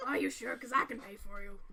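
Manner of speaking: put-on Scottish accent in a dwarf voice. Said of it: "I'm thinking Scottish too".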